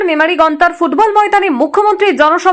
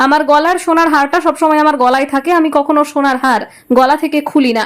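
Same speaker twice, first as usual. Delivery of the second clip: plain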